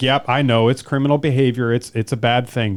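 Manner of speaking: put-on dismissive tone. Imitating an interviewee talking about criminal behavior: imitating someone dismissive. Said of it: "so dismissive of it".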